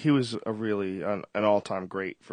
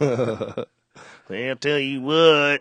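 put-on mean comic voice, higher and louder; 5 semitones higher, 8 dB louder than usual. Joking about insults with another speaker: mean Larry the Cable Guy voice. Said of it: "The mean Larry the Cable Guy".

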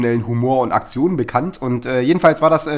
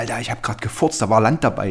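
hushed, secretive whispered aside; 3 semitones lower, 3 dB quieter than usual. Recounting what a man whispered to the speaker: retelling a whisper. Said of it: "dann flüsterte er mir so zu".

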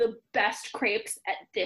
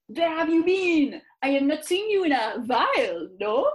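put-on French accent laid on thick, raised; 3 semitones higher, 5 dB louder than usual. Reading a story aloud, voicing Antonio greeting Kieran, in a thick French accent. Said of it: "with his thick French accent".

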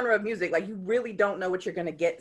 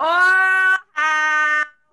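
very loud, high hype shout, Oil drawn out; 9 semitones higher, 11 dB louder than usual. Showing how a collective's name should be said: said really loud. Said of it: "you gotta say it really loud".

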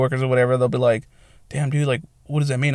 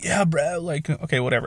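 put-on stoner voice; 3 semitones higher, 6 dB quieter than usual. Describing how the tattoo guy talked, stereotypical stoner voice. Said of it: "like, the stereotypical stoner".

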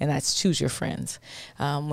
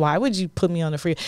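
ordinary talk, nothing marked

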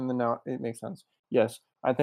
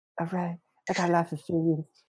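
put-on lisping boxer voice, pitched higher; 5 semitones higher than usual. Joking about a theory-loving character, doing a Mike Tyson impression. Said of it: "I'm done making fun of Mike Tyson".

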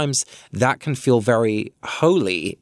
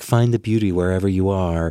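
put-on American-sounding accent; 3 semitones lower than usual. Mocking a pat phrase about finding beauty, American accent. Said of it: "that was an American accent".

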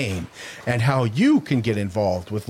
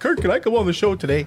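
pitched-up, pleading, begging voice; 8 semitones higher than usual. Retelling how a salesman asked to come on the show, imitating Sean begging. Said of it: "Like, begging".

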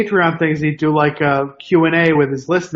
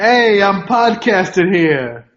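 New York accent put on playfully; 3 semitones higher than usual. Asked by a co-host to embrace a New Yorker accent: put-on New York accent. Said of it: "embrace that? ... New Yorker accent".

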